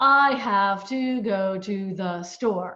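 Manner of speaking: slow, mechanical, robotic, every word set apart. An example sentence in a language lesson, said robotic, word by word. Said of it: "very robotic tone there".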